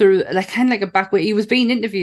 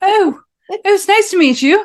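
put-on posh voice, much higher and louder; 13 semitones higher, 5 dB louder than usual. Showing how they speak to their posh auntie, imitating a posh voice. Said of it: "Start talking normally".

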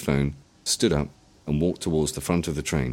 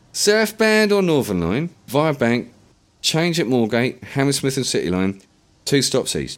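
put-on very high-pitched voice with heavy London accent; 10 semitones higher, 6 dB louder than usual. Reading a story aloud, a stranger gives tube directions: thick london accent. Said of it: "he said in a thick London accent".

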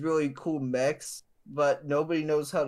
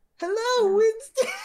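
put-on very high, loud, babyish little-girl toddler voice; 7 dB louder than usual. Imitating an annoying Overwatch 2 character, in a childlike three-year-old girl voice. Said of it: "sounds like she's a 3-year-old girl".

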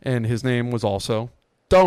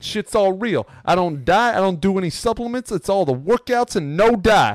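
high, loud Italian New York guy voice. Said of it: "and he's like".

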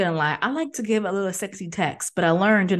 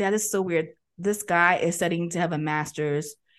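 ordinary talk

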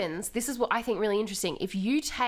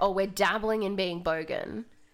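ordinary delivery

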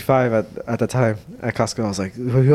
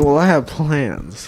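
mock-mysterious tone, slower. Teasing another speaker by repeating his words, imitating a mysterious tone. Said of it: "Did you hear the way he said it".

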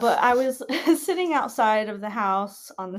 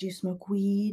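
imitated mumbly man's speech, quieter; 5 dB quieter than usual. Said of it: "he's very mumbly".

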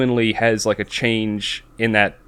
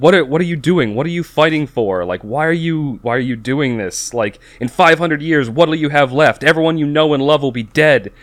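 mock held-in, mild, pleading shout; 4 semitones higher than usual. Retelling a show scene where the dad shouts at his son: imitating a father shouting. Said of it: "and he shouts at the".

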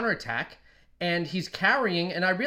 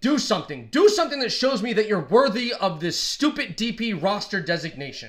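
mock yelling, acted-out shouting; 3 semitones higher, 3 dB louder than usual. A speaker retelling what he yelled at a player during the game, retelling yelling at the game. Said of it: "I'm yelling at the game".

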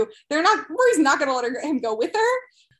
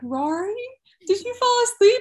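cautious, tiptoeing, very cute high voice; 7 semitones higher than usual. Retelling a yoga teacher waking someone up: imitating a cautious, cute voice. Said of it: "in, like, the most cautious, cute voice".

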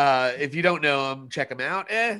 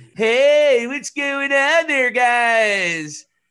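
very high, booming voice with "guys" stretched out; 10 semitones higher, 8 dB louder than usual. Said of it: "You know how [name] will be".

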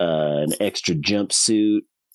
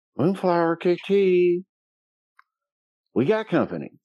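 very high voice, talking from corner of mouth; 10 semitones higher than usual. Player speaking in character to another character, out of the side of the mouth. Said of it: "out of the side of my mouth".

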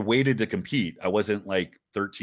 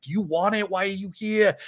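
put-on, very high, hard-driving, demanding yell; 11 semitones higher than usual. Recalling how he'd yell whenever you felt sorry for yourself, retelling his yelling. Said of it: "he'd yell at you".

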